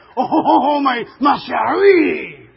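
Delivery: cartoonish French accent voice. Describing a favorite cartoon, quoting the skunk seeing the cat, Pepe Le Pew voice. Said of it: "he's always talking like this".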